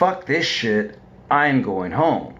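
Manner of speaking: put-on drunken, angry outburst voice. Retelling storming off drunk after a fight: retelling a drunken angry outburst. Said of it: "in my drunken, angry stupor".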